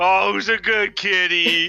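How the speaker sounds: put-on tipsy and teasing. In a role-play, one character teases another, drunk and mocking. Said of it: "drunk mockingly".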